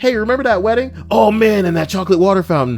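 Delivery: high, loud mock yell.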